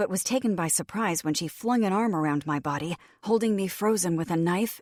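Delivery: ordinary delivery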